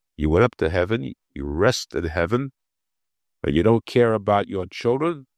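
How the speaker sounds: ordinary talk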